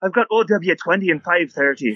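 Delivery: Scottish dwarf voice. Acting out a tavern barkeep taking an order: stereotypical Scottish dwarf barkeep voice. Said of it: "kind of like that Scottish dwarf".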